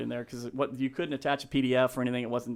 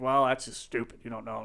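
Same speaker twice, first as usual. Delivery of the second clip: put-on gruff, curt voice. Retelling a phone call with a gruff man about a job: imitating Greg, gruff and curt. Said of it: "real gruff, real short".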